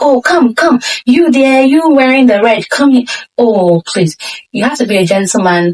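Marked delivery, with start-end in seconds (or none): 0.0-3.0 crude put-on shouting. Advising men not to call a Ghanaian girl over rudely, imitating someone shouting. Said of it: "screaming and shouting like".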